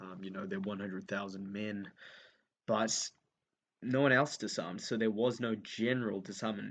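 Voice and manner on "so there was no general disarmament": the word general stressed in the phrase. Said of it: "Emphasis on the word general".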